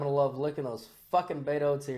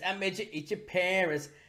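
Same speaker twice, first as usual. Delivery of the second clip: put-on cartoon kid voice, higher and quieter; 4 semitones higher, 6 dB quieter than usual. Retelling a cartoon scene to another speaker: Cartman voice. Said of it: "And Cartman's like".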